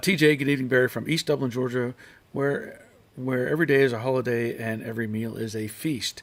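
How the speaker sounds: usual speaking voice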